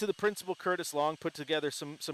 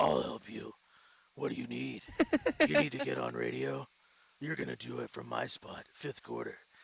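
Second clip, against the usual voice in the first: deep, low put-on voice; 4 semitones lower, 4 dB quieter than usual. Retelling how a colleague offered help like a hero, imitating a deep voice. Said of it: "he used a deep voice".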